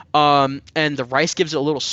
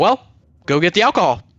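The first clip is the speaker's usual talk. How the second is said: mock impolite, rude, bossy voice; 3 dB louder than usual. Retelling what he said while demanding the alcohol: imitating a rude demand. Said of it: "that was so rude".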